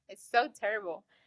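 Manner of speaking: ordinary talk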